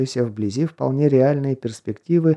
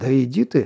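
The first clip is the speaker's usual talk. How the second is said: ordinary delivery, nothing marked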